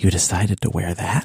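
hushed whisper. Starting a whisper game of the worst things to say on a date, whispering. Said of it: "we start whispering".

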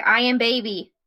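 lazy, lounging cat voice. Describing the pet still lying down: voicing the lazy pet. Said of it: "She's like".

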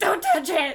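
loud, abrupt, sudden screeching outburst. Retelling a scene where Luann spins around at Peggy: imitating Luann's screech. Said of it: "spins around and just screeches".

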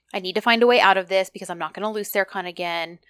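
normal talking voice

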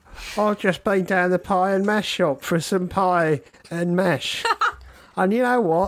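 jokey London Cockney voice. Taking turns doing a cockney voice: put-on cockney accent. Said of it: "especially when we do a Cockney voice".

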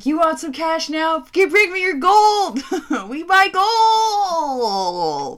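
very loud, very slow commercial pitchman voice. Imitating those gold-buying commercials: imitating a gold-buying commercial. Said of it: "I thought it was like those commercials".

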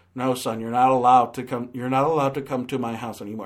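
flat, robotic monotone. Complaining about stiff line delivery, imitating Steve Carell's robotic delivery. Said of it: "it sounds like he was told to deliver it like a robot".

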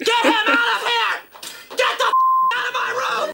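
mock enraged screaming, very high and shrill. Retelling how a character snaps at a joke: imitating an angry scream. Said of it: "gets really angry and starts screaming".

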